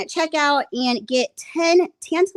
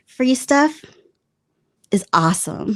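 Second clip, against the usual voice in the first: slow, drawn-out, put-on seductive sexy voice; 3 semitones lower than usual. Reading an ad line after being asked to read it sexier: put-on sexy voice. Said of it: "read that a tad bit sexier".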